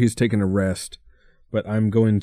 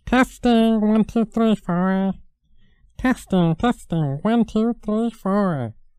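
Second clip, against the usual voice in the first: put-on puppet voice, much higher; 12 semitones higher than usual. Adjusting the puppet's voice with a test count, Samson puppet voice. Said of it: "Is that how your voice sounds like?".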